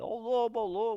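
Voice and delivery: over-the-top, high-pitched, absurd shout. Telling a fable, acting out the young shepherd calling for help: retelling an absurd shout. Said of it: "mas gritou de um jeito absurdo".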